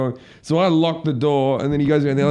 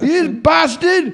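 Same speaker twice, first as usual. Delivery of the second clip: put-on man's screaming voice, higher and louder; 14 semitones higher, 4 dB louder than usual. Retelling a man in a McDonald's yelling: imitating a man screaming. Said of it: "he's yelling and fucking screaming".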